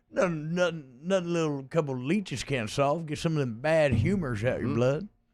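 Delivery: worst, generic fake Texas accent. Riffing on leech treatments in a group conversation, in a bad Texas accent. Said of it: "That's the worst Texas accent".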